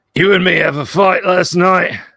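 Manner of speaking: high-pitched, restrained, near top-of-lungs bellow. Voicing a character's line in the game, bellowing at the top of his lungs. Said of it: "sounds like you're you're snapping uh, a, a piece of hardwood in half when he bellows at the top of his lungs".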